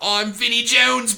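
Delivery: loud barking voice, slow and high.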